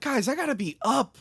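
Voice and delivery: mock, angry, very high-pitched annoyed voice. Retelling what a man with a headache told people screaming, imitating an angry man. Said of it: "he's angry at them".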